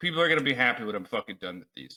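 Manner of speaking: gloomy, sour, pessimistic tone. Retelling a friend's remark when the dice reached him: imitating Isaac sounding negative. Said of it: "the most negative fucking context".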